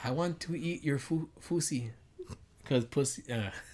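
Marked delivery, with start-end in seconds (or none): 0.0-1.9 mock Filipino accent, higher and quieter.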